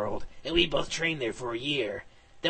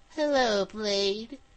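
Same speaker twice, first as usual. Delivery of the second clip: high-pitched, insect-like alien voice; 7 semitones higher than usual. Narrating a story, a woman appears on a transmission, in Kerrigan's bug-like voice. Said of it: "She said in a bug-like voice".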